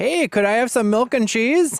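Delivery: very high, loud Midwestern American accent. Imagining asking for something abroad: Midwest American accent. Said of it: "with my Midwest accent".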